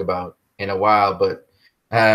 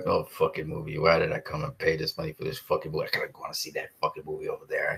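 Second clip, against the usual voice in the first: very quiet, angry, grumbling whisper under the breath; 5 semitones lower, 11 dB quieter than usual. Acting out sitting through a disappointing film in the cinema: mock mumbling under breath. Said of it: "I'd be mumbling under my breath".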